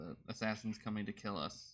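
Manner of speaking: ordinary delivery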